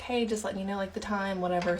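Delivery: casual, offhand whisper. Retelling reminding him of the time, whispering it casually. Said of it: "I'm just kind of like whispering it to him".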